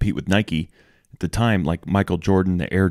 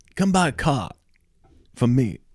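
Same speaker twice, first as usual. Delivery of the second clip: bad put-on Boston accent, pitched up; 6 semitones higher than usual. Advertising car sales as the dealership owner, in a bad Mark Wahlberg impression. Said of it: "Is that supposed to be a Boston accent?".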